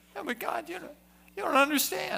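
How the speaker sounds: whining, complaining, whiny voice. Demonstrating complaining to God like Elijah did: whiny voice. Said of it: "Elijah got into the whiny voice. You ever tried this?".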